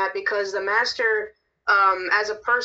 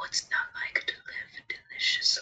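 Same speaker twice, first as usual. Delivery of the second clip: hushed, breathy, soft, whispery, tempting voice; 8 dB quieter than usual. Imitating a line from a horror movie about the devil: whispery voice.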